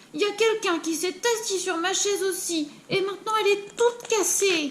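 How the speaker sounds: crying out with a very high voice. Reading the three bears story aloud, the narrator voices Baby Bear: Baby Bear crying out. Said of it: "il crie".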